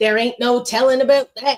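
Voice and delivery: loud, folksy, country-style Western twang laid on thick. Describing a TV character's odd phrasing, the speaker quotes her in Kaylee's Western twang. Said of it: "a Western twang".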